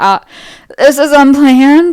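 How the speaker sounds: acted stressed, very loud voice. Retelling what Eric said on stage after returning alone: imitating a stressed voice. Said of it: "He seemed like a stressed voice".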